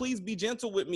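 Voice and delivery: put-on high, tearful crying like a little girl. Telling a story about a man and a demon, imitating someone crying. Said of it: "he's crying like a little girl".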